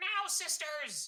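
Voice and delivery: very high female creature voice calling out. Narrating a fight, voicing a were-rat woman calling to her hidden sisters. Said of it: "she's like".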